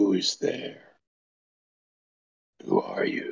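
barely voiced, very quiet whisper. Game master voices an unseen voice the players hear, whisper. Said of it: "You hear a voice whisper".

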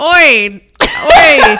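put-on very loud, shrill, terrible English accent. Retelling a story about threatening phone calls, the speaker attempts a bad english accent. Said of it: "That's still terrible".

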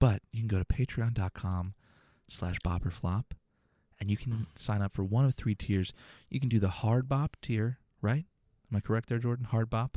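soft, hushed, very quiet delivery. Host plugging the patreon tiers to listeners, checking with a co-host: talking very quietly. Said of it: "it hurts to talk that quietly".

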